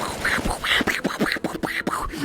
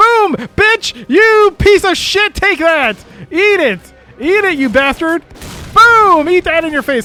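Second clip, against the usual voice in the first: loud, high-pitched gamer-style yelling right into the mic; 8 semitones higher, 6 dB louder than usual. Player shooting an enemy in a game after forgetting the gun, yelling. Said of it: "Sorry for yelling in the mic".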